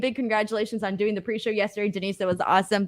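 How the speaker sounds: normal talking voice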